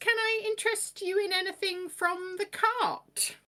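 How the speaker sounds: put-on very high, measured, deliberate old lady voice. Voicing an old woman who greets the party: Granny voice. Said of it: "She pauses speaking and very deliberately".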